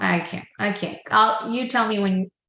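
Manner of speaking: put-on frustrated adult. Speaker acting out an adult giving up on the kids, mock-frustrated adult. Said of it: "because you got frustrated with them".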